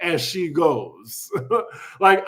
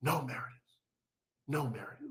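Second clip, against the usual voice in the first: very quiet, worried, concerned, pleading whisper; 5 semitones lower, 17 dB quieter than usual. Retelling a reality show scene, imitating Mary, concerned. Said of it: "Mary says with such concern".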